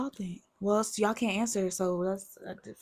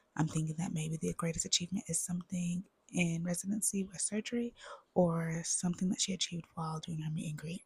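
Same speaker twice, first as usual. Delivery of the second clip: speaking in a whisper; 5 dB quieter than usual. Answering a question while the other speaker can't hear: whispering.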